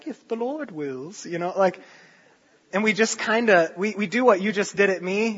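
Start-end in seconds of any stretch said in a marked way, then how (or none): 0.1-1.3 put-on soft British woman's accent. Describing how people mock an overused phrase, british woman's voice. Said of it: "Like in a British woman's voice".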